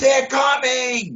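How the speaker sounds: acted-out, very high, shrill scream. Retelling the moment his wife, out getting the mail, screamed: retelling a scream. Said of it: "And she's screaming it".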